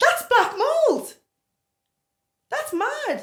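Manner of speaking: very high, loud, screaming yell. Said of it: "I'm like screaming down".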